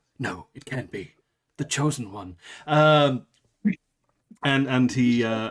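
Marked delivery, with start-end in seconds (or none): 0.2-2.4 low, hushed half-whisper under the breath. Voicing a shocked character who mutters about the chosen one: half-whispering under his breath. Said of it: "you hear him whisper under his breath".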